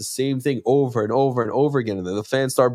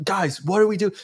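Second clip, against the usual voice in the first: play-acted, high-pitched shouted yelling; 7 semitones higher than usual. Retelling a quarterback yelling at the team: imitating someone yelling. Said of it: "he's yelling at the team".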